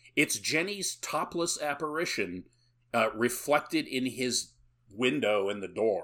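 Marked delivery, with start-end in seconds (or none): none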